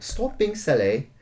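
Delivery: wide-pitched mock posh British accent.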